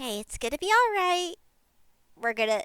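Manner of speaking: soft, calming, soothing, comforting voice. Voicing Mad Lad calming two others down: soothing voice. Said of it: "as Mad Lad tries to help soothe the two".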